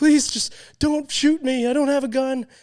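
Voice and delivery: put-on shrill, tearful, high, loud crying. Retelling a police story, voicing the drunk man begging the cop: imitating a man crying. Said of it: "And the guy's like crying".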